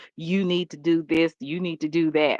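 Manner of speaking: ordinary delivery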